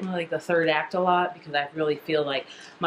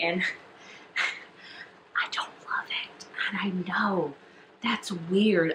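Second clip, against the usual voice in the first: soft, hushed whisper, half under the breath; 5 dB quieter than usual. Confessing a dislike of a favorite author's book, whispering. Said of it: "I'm whispering because it feels like blasphemy".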